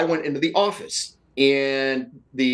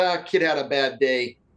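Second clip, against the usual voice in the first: play-acted obtuse, offhand, dismissive, can't-be-bothered tone. Retelling a police officer's reply: imitating a dismissive tone. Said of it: "he looked at me very dismissively and said".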